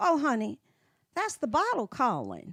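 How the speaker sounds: put-on sing-song little old lady voice. Quoting an old lady friend's stock reply to complaints, imitating an old lady friend. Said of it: "She talked like this".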